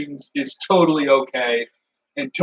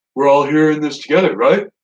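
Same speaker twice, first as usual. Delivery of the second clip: completely serious, earnest tone; 4 dB louder than usual. Imagining a chat member acting calm and decent: John Cena impression. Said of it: "when John Cena's all like".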